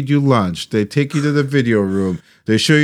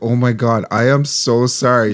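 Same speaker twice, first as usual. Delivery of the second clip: ordinary delivery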